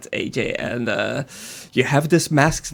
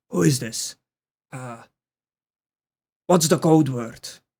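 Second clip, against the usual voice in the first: hoarse, raspy voice, filtered like a walkie-talkie. Voicing a character answering over a walkie-talkie: raspy voice over walkie-talkie. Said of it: "a raspy voice coming over through".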